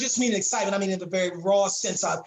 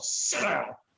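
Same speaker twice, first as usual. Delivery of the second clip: put-on low harsh hiss through clenched teeth; 3 dB quieter than usual. Retelling how mom spoke when he got in trouble: imitating mom speaking through clenched teeth. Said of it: "talk to me ... from between her teeth".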